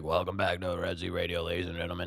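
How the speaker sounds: worn-sounding voice. Retelling how they sounded in the morning video: imitating own sore-throat voice. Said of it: "Did you hear how I sounded in the video this morning?".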